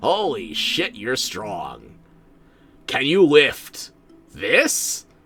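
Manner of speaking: put-on slow, dazed stoned voice. Acting out staring at a strong character while very high: pretending to be very high. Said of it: "like I had twenty edibles".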